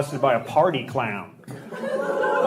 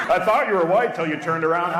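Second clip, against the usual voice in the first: ordinary delivery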